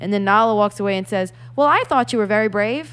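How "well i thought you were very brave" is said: oddly cheerful, upbeat put-on voice. Complaining about a movie remake, imitating Nala: put-on weird happy Nala voice. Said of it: "in a weird, happy voice".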